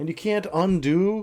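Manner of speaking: exasperated. Finding the work is gone and cannot be undone, frustrated. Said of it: "I'm gonna upload it with the frustration".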